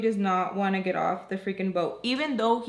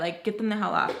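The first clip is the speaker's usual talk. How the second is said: ordinary talk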